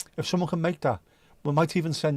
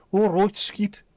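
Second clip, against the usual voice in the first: jokey mock Brummie accent, raised and high; 6 semitones higher, 5 dB louder than usual. Showing how people in birmingham are joked to talk, in a mock birmingham accent. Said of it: "as a piss take".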